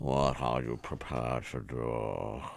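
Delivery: bad, warped Scottish accent with "do" drawn out. Quoting the dying scene from The Untouchables, warped Sean Connery impression. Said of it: "like the the cassette tape was in the sun for too long".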